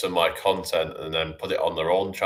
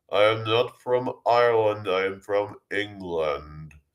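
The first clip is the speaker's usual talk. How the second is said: put-on robot voice, higher pitch; 2 semitones higher than usual. Continuing a comic bit, the speaker does a Stephen Hawking robot voice. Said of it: "I speak like a robot".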